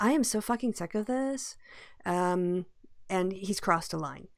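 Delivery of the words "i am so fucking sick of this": put-on Valley Girl accent. Quoting American voters who are fed up with Trump: put-on Valley Girl accent. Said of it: "Did you just do a Valley Girl accent then?".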